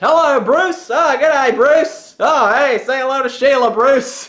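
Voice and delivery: very loud, booming, very high, full comedy-troupe voice. Retelling a bit done in an improv course: Monty Python sketch imitation. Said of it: "an imitation of an old Monty Python bit".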